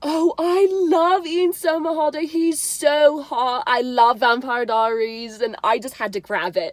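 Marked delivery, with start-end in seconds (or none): 0.0-5.4 put-on high, slow, raised British accent. Retelling what Millie Bobby Brown said about a celebrity: imitating Millie Bobby Brown's British accent. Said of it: "in her little British accent".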